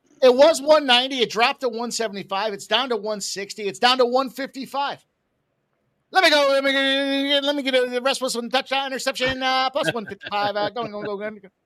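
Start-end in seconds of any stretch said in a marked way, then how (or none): 2.5-11.4 auctioneer-style impression, pitched much higher. Speaker calls out a run of dropping numbers to a listener, doing an auctioneer imitation. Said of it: "my best imitation of an auctioneer".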